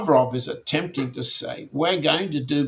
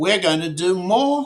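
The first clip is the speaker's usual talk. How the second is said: questioning upward rise on the word "more"; 4 semitones higher than usual. Quoting a foreign minister's statement, rising question tone on more. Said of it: "I put a question mark in my voice there".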